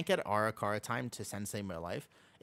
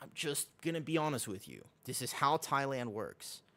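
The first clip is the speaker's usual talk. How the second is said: normal talking voice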